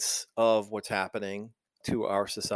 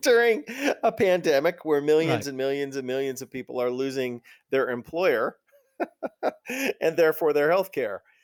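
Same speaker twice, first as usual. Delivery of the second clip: words broken up by laughter throughout; 4 semitones higher than usual. Speaking with another speaker in conversation, laughing while talking. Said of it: "I'm laughing. I shouldn't be laughing".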